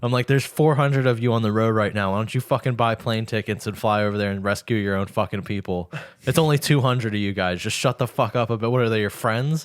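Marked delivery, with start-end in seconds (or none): none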